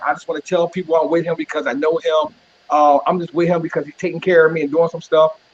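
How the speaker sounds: plain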